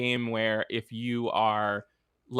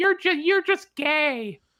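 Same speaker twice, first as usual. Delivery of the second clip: put-on very high, tiny little child voice; 4 dB louder than usual. Recounting a game teammate's reply after being told to shut up, little child's voice. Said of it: "it was like a little ch- child's voice going".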